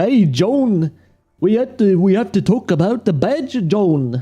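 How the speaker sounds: put-on Liverpool accent. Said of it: "like the Beatles or something".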